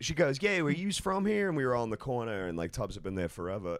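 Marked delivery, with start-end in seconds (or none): 0.4-1.5 put-on Philadelphia accent, pitched very high. Retelling what a woman at a dive said, in a philly accent. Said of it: "the Philly accent".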